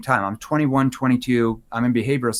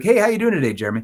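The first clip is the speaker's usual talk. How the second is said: quick, light, friendly, teasing tone; 5 semitones higher than usual. Demonstrating how to greet Jeremy as a trusted authority, playful tone. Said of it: "So I might be in a playful tone".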